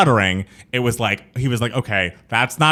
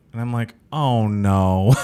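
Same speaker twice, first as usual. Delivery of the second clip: normal talking voice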